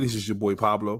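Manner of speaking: usual speaking voice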